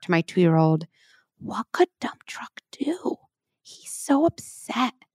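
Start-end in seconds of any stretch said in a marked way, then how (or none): 1.4-4.9 slow, soft whisper. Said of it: "maybe whisper".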